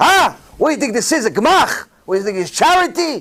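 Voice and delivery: high-pitched, fed-up male frustrated yell. Retelling how a frustrated man yelled at a woman, retelling a man yelling. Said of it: "he started yelling at the woman".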